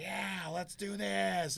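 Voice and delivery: very slow, high, gremlin-like drawl. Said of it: "Gremlin style".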